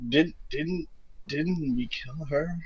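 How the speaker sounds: put-on very quiet, slow, stumbling drunken whisper. Voicing a character whispering to another while walking away: drunken whisper in character. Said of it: "Luna whispers over to Michaelo".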